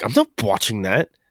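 said with pure distaste. Retelling what he said in reply to her, imitating his disgust. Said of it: "with disgust".

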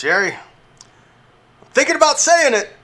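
squeaky put-on character voice, pitched very high. Acting out a Seinfeld scene where George walks in: George impression. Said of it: "George walks in".

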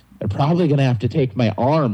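usual speaking voice

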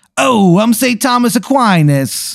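put-on high, slow, drawn-out Jersey Italian accent. Narrating a scene, voicing St. Thomas Aquinas speaking in the listener's ear, Jersey Italian accent. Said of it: "He's kind of like a jersey it- uh, Italian".

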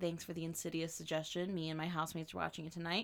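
ordinary delivery

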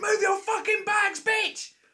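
shrill, high, drawn-out furious yell at full volume. Speaker retells what they shouted at a woman on a train; retelling their own shout. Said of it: "at the top of my voice".

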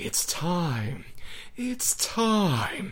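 creepy, very slow, soft, hushed, eerie announcer voice. Speaker imitates the commercial's announcer, in a creepy Tommy Lee Wallace voice. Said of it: "unsettling, creepy commercial voice".

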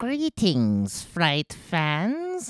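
creepy, very high sing-song voice with fans drawn out. Asked by co-hosts for the promised bit, do a creepy Crypt Keeper impression. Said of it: "[name] is going to do his impression of the Crypt Keeper".

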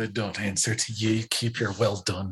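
muttered grumble, under the breath, half to oneself. Imagining a reply to being told well done, acting out muttering under breath. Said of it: "I'd probably mutter under my breath".

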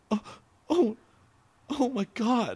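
tearful whimper, very high and very slow, near sobbing. Retelling a customer's reaction to bad news at a restaurant: imitating someone almost crying. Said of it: "almost started crying".

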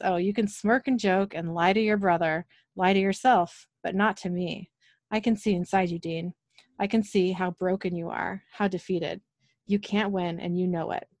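ordinary delivery

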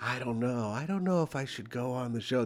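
very quiet, low, barely audible voice. Imitating a comedian debating whether to come on the show: imitating Jim Gaffigan's inner voice. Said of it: "That's his inner voice he does".

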